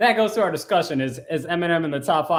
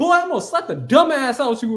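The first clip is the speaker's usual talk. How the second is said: mock heated, riled-up, pitched-up angry voice; 9 semitones higher, 4 dB louder than usual. Retelling what Javon Evans said at the award: imitating Javon Evans sounding pissed off. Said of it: "you really sound like a pissed off nineteen-year-old".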